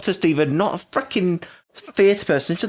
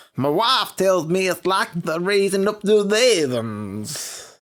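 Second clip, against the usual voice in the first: bad put-on New York accent, higher, slow. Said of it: "I'll do it for you".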